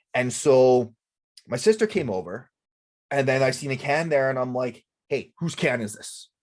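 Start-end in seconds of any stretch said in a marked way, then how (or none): 5.0-6.2 put-on joking sarcastic tone. Retelling asking the sister whose can it was: imitating own sarcastic joking. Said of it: "Jokingly and sarcastically".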